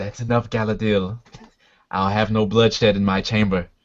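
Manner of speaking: soft but steady, calm voice. Voicing a king who stops a quarrel in his chamber: soft but steady voice. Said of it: "steady voice says".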